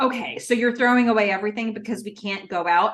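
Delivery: offhand, dismissive, brushing-off tone. Retelling what a character said: imitating a dismissive tone. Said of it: "she says it in a totally dismissed kind of way".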